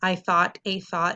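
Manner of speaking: zero-expression, flat monotone reading. Showing a confusing sentence read flat, with no expression. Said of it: "if you read it with zero expression, okay, just like this".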